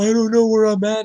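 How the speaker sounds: put-on tearful, high, loud childlike blubbering, like a crying kid. Retelling a lost new kid at a party: imitating someone crying.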